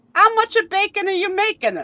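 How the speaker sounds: put-on heavy, thick Italian accent, voice very high-pitched. Retelling a family story, quoting the speaker's mother in a thick italian accent. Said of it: "in her thick Italian accent".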